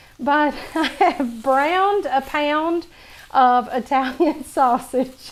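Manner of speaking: words forced out through laughter. Showing how to make a dish while filming, laughing while talking. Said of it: "I'm sorry I'm laughing".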